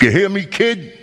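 put-on tough Brooklyn accent. Retelling what he told a kid, putting on a tough brooklyn accent. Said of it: "I even threw in a little Brooklyn accent".

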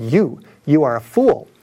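put-on solemn, booming street preacher voice. Retelling a preacher's loudspeaker answer: imitating a booming voice. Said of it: "said with a booming voice".

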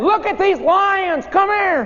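put-on high, slow, excited children's voices calling out.

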